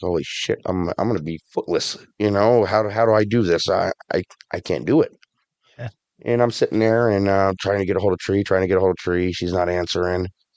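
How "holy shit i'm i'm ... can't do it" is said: re-enacted crying. Speaker retells being alone in hospital after bad news, retelling own crying. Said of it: "I start crying".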